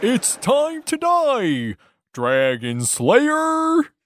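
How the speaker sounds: very high, weird, swooping turtle character voice. Playing a character in the game, addressing the Dragon Slayer in a weird turtle voice. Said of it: "Weird voice, weird voice, man".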